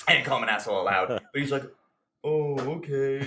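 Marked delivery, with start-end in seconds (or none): 2.2-3.2 imitated mopey, sulky teenage voice. Recounting his reply after being yelled at, imitating a mopey teen. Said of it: "It sounds like a mopey 14-year-old".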